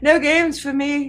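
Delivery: high, drawn-out, swooning 1800s lady voice. Imagining the line from an 1800s woman with the vapors: swooning 1800s lady voice. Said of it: "like uh eighteen hundreds woman with a vapors".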